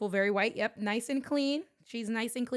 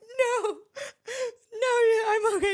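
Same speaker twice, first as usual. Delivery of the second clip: put-on very high, tearful, drawn-out sobbing voice; 12 semitones higher, 6 dB louder than usual. Retelling a phone call after getting hurt, imitating own hysterical crying. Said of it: "I call her hysterically crying".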